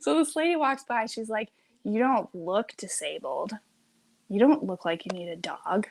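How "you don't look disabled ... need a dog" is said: put-on muttering under breath. Retelling a passing lady's remark about the service dog: imitating a muttered remark. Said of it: "of course she's mumbling under her breath".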